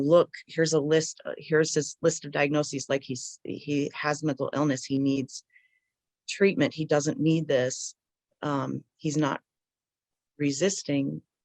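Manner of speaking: ordinary delivery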